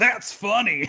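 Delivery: words spoken through laughter. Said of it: "He's like".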